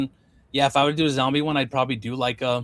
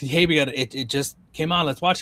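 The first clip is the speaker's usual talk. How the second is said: ordinary talk, nothing marked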